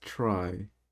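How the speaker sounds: leaning hard on the word 'try'. A speaker sets up a discussion, with big stress on the word 'try'. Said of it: "big emphasis on the word try".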